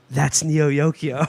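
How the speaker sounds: put-on whisper. Retelling how someone whispered during a premiere screening: imitating Catherine whispering. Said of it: "tap me on the shoulder and whisper".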